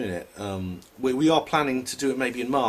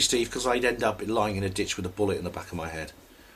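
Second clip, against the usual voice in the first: usual speaking voice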